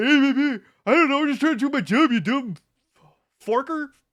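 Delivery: high-pitched, loud ranting. Retelling their reply to people questioning them at work: retold rant in a Patrick voice. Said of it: "You ranted so much".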